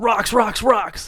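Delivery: loud, alarmed shout. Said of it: "he yells".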